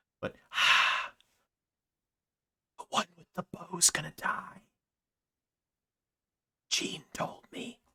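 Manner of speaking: hushed, airy whisper with lots of breath. A character with foul breath whispers to you, in a breathy whisper. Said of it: "he whispers to you very breathily".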